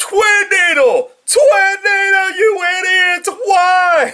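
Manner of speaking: very high, loud, upset, exasperated yelling. Retelling watching an episode and screaming at the laptop: imitating own past screaming. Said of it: "I was literally screaming at the fucking laptop".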